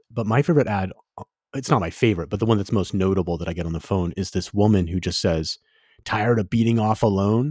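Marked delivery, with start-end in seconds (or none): 6.0-7.5 mock, emphatic announcer-style ad voice. Quoting a woman in a phone ad, imitating her loud delivery. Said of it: "She says it really loudly".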